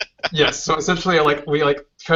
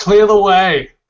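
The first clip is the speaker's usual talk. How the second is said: loud, high blaring voice, like a car radio; 5 semitones higher, 6 dB louder than usual. A character's voice comes out of the car radio: blaring out of the radio. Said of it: "My voice blares out of the radio".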